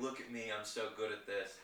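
normal talking voice

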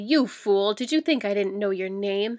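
harsh, biting tone. The Trademaster leans close to Gabe and speaks harshly. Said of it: "said harshly".

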